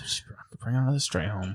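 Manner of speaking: mumbled under breath. Aside to the others as she brings the creature home anyway; muttered. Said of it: "she mutters".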